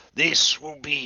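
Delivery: giant, monstrous creature voice.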